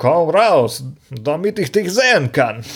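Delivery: slow, put-on Russian accent. Retelling a scene where a man walks around calling out, put-on russian accent. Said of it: "ruft er so mit seinem russischen Akzent".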